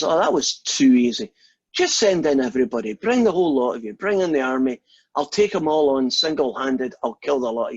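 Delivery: put-on small voice with broad-sounding Scottish accent. Telling a joke, the little Scottish voice taunts the English army, in a Scottish accent. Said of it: "the little Scottish voice says".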